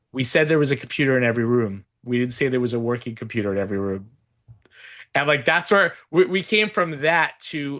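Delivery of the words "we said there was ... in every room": ordinary talk, nothing marked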